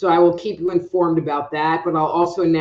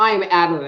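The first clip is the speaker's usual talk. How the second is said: ordinary talk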